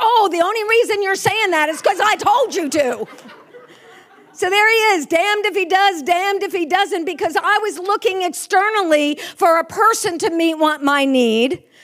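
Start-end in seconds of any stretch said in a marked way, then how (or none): 0.0-3.1 mock tearful, accusing emotional outburst of protest. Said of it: "throwing an emotional fit".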